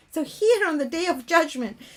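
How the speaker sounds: plain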